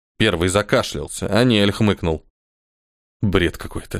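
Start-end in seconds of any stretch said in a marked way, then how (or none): 3.2-4.0 muttered under breath, lower and quieter. Reacting to a legend another character tells, muttered. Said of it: "пробормотал он".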